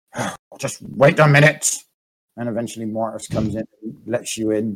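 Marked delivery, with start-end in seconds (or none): 0.1-1.7 rough, gruff, called-out voice. Narrating a late arrival at locked doors, a voice calls out: gruff Morris voice. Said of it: "you hear a gruff voice go".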